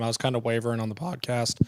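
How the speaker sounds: voice cracking, breaking mid-phrase. Podcast host discussing a past game pick, voice cracking. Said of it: "that was a voice crack there".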